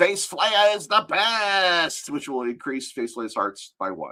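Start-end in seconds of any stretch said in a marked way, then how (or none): 0.0-2.1 high, drawn-out, full-throated top-of-lungs shout. Voicing Makari waving the boss pole, shouting at the top of his lungs. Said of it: "at the top of his lungs and shout".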